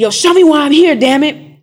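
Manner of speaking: furious yelling. Retelling a moment alone in a room: retelling an angry yell at God. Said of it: "Yelling at God".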